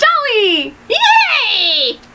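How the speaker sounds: high, cackling, cheerful witch voice. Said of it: "You sounded like a witch when you did that".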